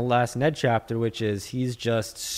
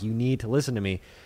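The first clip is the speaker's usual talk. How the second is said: normal talking voice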